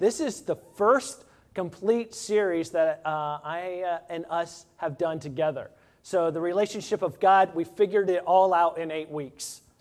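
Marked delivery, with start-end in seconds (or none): none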